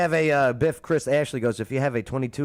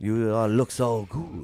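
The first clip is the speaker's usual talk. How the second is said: mock French cartoon skunk voice. Joining in a joke about skunk mating season: Pepe Le Pew voice. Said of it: "Pepe Le Pew".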